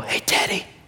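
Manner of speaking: soft, breathy, whispered, weak voice with no strength.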